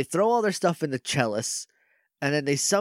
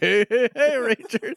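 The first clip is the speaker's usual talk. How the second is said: high-pitched, full cartoon-character voice; 8 semitones higher, 4 dB louder than usual. Retelling how one player grabbed the staff and did a Fat Albert impression. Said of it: "he does like a fat albert impression".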